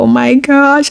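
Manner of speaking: put-on frantic alarm. Retelling calling a daughter who would not answer: imitating own panic. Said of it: "At this point, I was panicking".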